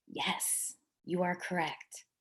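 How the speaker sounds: slow, hushed, very drawn-out whisper. Retelling what a school leader said at a conference: imitating someone whispering. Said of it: "and she whispered".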